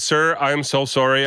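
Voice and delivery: normal talking voice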